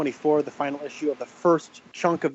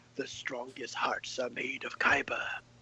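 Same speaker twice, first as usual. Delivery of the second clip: put-on ominous voice, slower; 3 semitones lower, 11 dB quieter than usual. Recounting a story's scene and quoting the background voice, imitating an ominous voice. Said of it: "ominous voice in the background that says".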